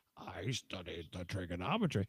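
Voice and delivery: funny voice, very low and hushed, barely audible. Describing how Mr. Bean talks in the first episode, in a funny Mr. Bean voice. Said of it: "he has a funny voice because he's like".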